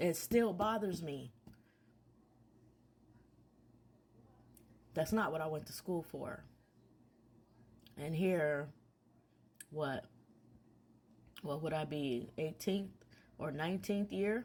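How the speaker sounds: teary-eyed, about to cry. Saying the trauma still bothers them, teary-eyed and about to cry. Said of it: "I'm teary-eyed and a tear is about to fall".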